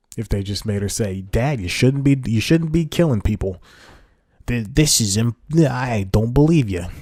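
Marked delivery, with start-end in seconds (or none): 1.3-6.9 put-on Italian accent. Acting out a line a daughter might have said to her father: put-on Italian accent. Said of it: "so that's my Italian voice".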